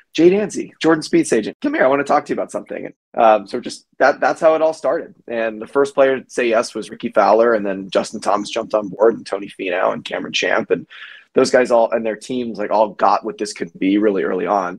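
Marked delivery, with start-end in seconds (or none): 0.1-2.8 calling out, but kept contained and restrained. Retelling calling to golf agents from outside the ropes: imitating own quiet yelling. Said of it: "quietly yelling".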